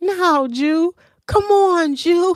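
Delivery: small, high little voice, very slow and drawn-out. Teasing a cute streaming couple, the speaker imitates one of them in a little voice. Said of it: "in her little voice".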